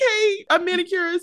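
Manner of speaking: playful mock voice. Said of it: "I'm like".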